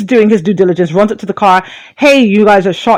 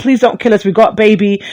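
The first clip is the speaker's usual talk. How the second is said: imitated desperate pleading tone. Retelling her plea to the cop after a shooting: imitating someone pleading. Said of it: "She's pleading".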